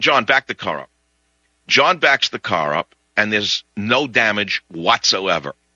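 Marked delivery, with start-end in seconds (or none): none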